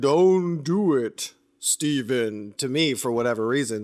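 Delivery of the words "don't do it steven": mock very slow, drawn-out disembodied voice. Describing a suspicious scene with a talking snake, speaker voices a warning: loud booming voice. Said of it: "There's a loud booming voice saying".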